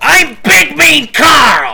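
very high, very loud, shrill goofy yell. Describing a character from the show who eats phones, yelling as Big Mean Carl. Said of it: "I'm just blowing out the mics doing that".

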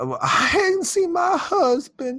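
very high, slow, swooping, drawn-out sing-song voice. Retelling a question from Maggie who came asking: imitating Maggie. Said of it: "That's a good impression".

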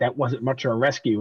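ordinary delivery

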